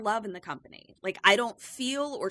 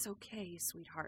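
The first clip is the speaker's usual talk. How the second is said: gentle, soft, soothing comforting whisper; 2 semitones lower, 18 dB quieter than usual. Retelling a scene where House Mother puts Caroline to bed: imitating a soothing voice. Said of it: "soothing Caroline".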